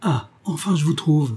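glad, delighted, happy-sounding tone. Anna finally finds the others, delighted. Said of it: "Anna parut ravie".

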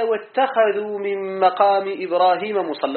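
ordinary talk, nothing marked

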